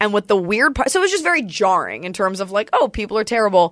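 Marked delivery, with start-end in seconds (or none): none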